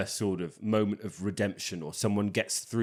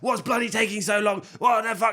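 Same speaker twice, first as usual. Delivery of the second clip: play-acted, very high, shrill, furious shouting outburst; 12 semitones higher, 6 dB louder than usual. Retrying an impression of a movie character arguing in a queue, imitating her furious shouting. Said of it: "not her voice at all".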